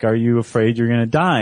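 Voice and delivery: ordinary delivery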